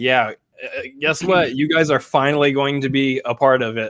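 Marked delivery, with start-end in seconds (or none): none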